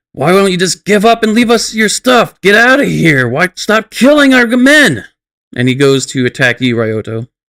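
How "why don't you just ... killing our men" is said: high-pitched yelling repeatedly broken by grunts. Game narrator voicing an attacker, grunting and yelling. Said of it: "just kind of like grunting and yelling at you".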